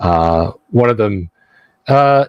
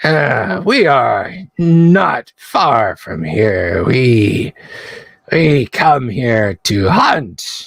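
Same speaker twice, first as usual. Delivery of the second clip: yappy, barking creature voice, high and slow yips; 6 semitones higher than usual. Voicing a club-carrying creature greeting the party: yipping and barking voice. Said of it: "yipping and barking kind of voice".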